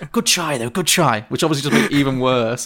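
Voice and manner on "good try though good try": mock whispering really quietly. Retelling how a terrified co-star whispered to them; retelling a quiet whisper. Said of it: "kind of whispered really quietly".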